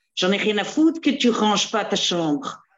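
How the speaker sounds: fake Belgian accent. Recalling how she talks strategy with her daughters, in a put-on Belgian accent. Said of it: "tu prends un accent belge".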